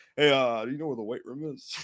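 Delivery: very deep, put-on, posing-cool, try-hard voice. Retelling a movie scene of someone walking up to a girl: imitating someone acting cool. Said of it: "He's trying to act all cool".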